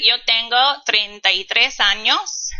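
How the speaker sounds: usual speaking voice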